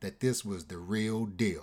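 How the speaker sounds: ordinary delivery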